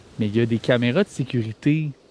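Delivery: ordinary talk, nothing marked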